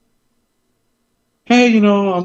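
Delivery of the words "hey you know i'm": high, polite professional voice. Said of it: "when I have to be professional".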